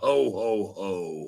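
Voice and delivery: deep, put-on character laugh. Announcing a switch to a character voice: Santa Claus voice. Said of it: "I have to do my Santa Claus voice now".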